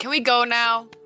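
acted-out yell. Recalling calling out from a doorway to the others, retelling a yell. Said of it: "I yell from the doorway".

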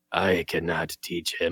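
suddenly dead serious, dropped low and slow. Quoting the moment the character turns serious: serious Yoda voice. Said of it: "going from Goofy to be like".

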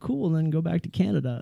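usual speaking voice

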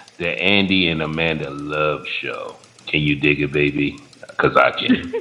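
very deep, hushed, soft announcer voice. Doing the show intro again at a co-host's request: deep voice. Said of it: "He goes so deep with his voice".

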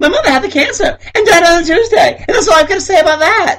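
put-on high, wooden child-actor delivery. Describing an actress playing a kid at acting camp: bad kid actor doing Forrest Gump. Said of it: "kids who are terrible actors".

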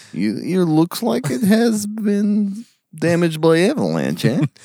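put-on very high Russian accent. Friends joking about accents, asking about avalanches: russian accent. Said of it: "It moved into Russian".

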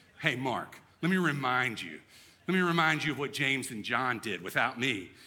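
scornful, disdainful, pointed tone. Explaining the Gospel of Mark, the speaker is acting out Peter's disdain. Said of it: "you can almost hear the disdain in Peter's voice".

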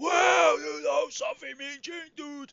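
very loud, high-pitched wrestling promo bellow. Imitating how the wrestler speaks to Mean Gene: Hulk Hogan voice. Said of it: "how he would speak when he's speaking to Mean Gene".

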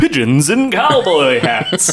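put-on news announcer voice, broadcast anchor delivery. Switching topics with 'in other news', the speaker does a news announcer voice. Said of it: "let me do the announcer voice".

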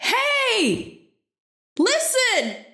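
very high, shrill shout. A player's character shouts into the hallway hoping it echoes to the others; yelling. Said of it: "She yells".

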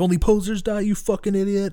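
put-on freaking-out scream. Retelling a character's outburst over his best friend, retelling a scream. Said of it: "he's screaming, he's freaking out".

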